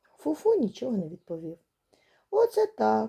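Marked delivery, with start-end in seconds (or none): 2.3-3.1 thrilled, delighted, exclaiming tone. Looking around on all sides, a character exclaims in delight. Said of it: "захоплено вигукнув Киць-Киць".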